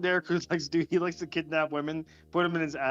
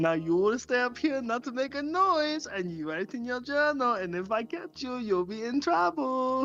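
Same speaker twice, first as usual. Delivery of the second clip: put-on German accent, pitched up; 8 semitones higher than usual. During a joke to the guys, the speaker gives orders: German accent. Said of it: "That's pretty decent German accent".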